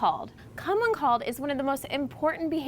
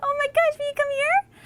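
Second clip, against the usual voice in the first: thrilled, coaxing call, very high and loud; 13 semitones higher, 5 dB louder than usual. Speaker demonstrates calling a dog to come, in a high-pitched excited voice. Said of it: "a higher pitched voice that's really exciting".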